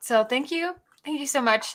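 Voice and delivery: soft voice right on the edge of crying. Streamer thanking viewers for the money raised tonight, near tears. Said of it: "I need to stop before I cry".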